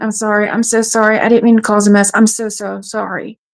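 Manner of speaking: tearful, crying, apologetic voice. Retelling apologizing to nurses while losing blood: imitating own past crying. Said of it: "crying and going".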